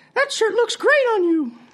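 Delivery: squeaky voice pitched very high. Telling a bar joke, voicing the unseen voice the man hears: high-pitched voice. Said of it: "he hears a high-pitched voice that says".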